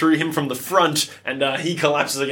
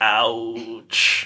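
low, drawn-out, wounded alien voice; 5 semitones lower than usual. Voicing a stabbed droid's final call: E.T. hurt voice. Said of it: "Like an E T reference".

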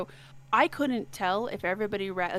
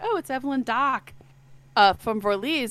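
put-on full Boston accent; 4 semitones higher, 7 dB louder than usual. Recalling their own reaction to a character's name, in a Boston accent. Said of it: "I had to say it in a Bostonian accent the whole time".

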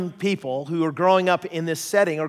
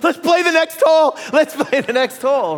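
shrill, very high, loud yelling; 10 semitones higher, 6 dB louder than usual. Retelling a golfer fleeing a bear: imitating someone yelling. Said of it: "and he's yelling".

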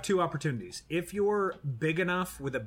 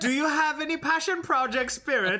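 fake German accent, higher and louder; 11 semitones higher, 5 dB louder than usual. Reading out a listener's question, joking: put-on german accent. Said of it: "that was German".

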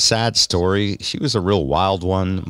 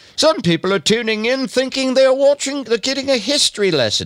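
bad put-on British accent, higher. Quoting press releases about the show: bad Monty Python British accent. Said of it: "I'll sound like bad Monty Python".

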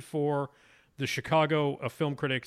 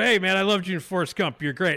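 put-on drunken talk, higher and louder; 5 semitones higher, 7 dB louder than usual. Retelling going up to an award winner while drinking: imitating being drunk. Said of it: "and I had been drinking".

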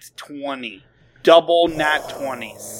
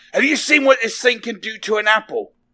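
menacing, threatening yell, pitched high; 8 semitones higher than usual. A player puts a pistol to a pinned character's head, shouting. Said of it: "and just shout".

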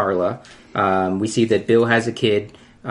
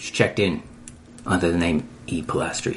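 whispered put-on action-star voice; 5 semitones lower, 6 dB quieter than usual. Describing a moment from an episode in a Jason Statham voice. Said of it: "I turned into Jason Statham there".

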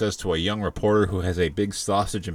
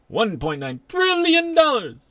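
harsh, very high, belted sing-song announcer voice; 5 dB louder than usual. Announcing a big stimulus number: horrible Yolanda Vega impression. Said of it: "That was a horrible impression".

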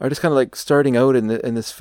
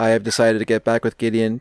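flat, level, robotic, machine-like monotone without tune; 2 semitones lower than usual. Recounting a movie scene where Ramona answers Scott, in Ramona's robotic voice. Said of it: "in almost a robotic way".

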